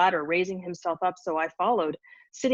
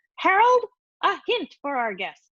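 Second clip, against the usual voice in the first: shrill, very high cackle; 10 semitones higher, 4 dB louder than usual. Reading a story, narrator voices someone calling up from below, in a cackling voice. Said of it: "the voice cackled at us from below".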